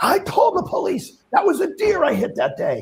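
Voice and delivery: mock angry ranting, pitched way up. Retelling how a man went absolutely off in a back-and-forth, retelling him going off. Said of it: "He goes absolutely off".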